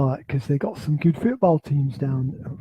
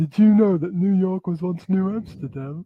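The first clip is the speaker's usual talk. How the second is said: fake, hammy, laid-on Liverpool accent; 4 semitones higher than usual. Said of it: "You're doing you're doing the Beatles accent again".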